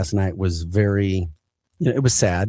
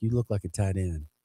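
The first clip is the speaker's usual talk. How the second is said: quiet, soft-spoken, easy delivery; 8 dB quieter than usual. Retelling a talk with Sweet, imitating Sweet's soft-spoken voice. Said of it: "he had such a soft spoken voice".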